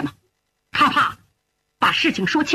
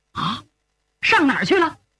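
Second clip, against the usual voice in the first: plain reading voice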